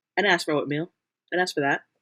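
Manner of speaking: normal talking voice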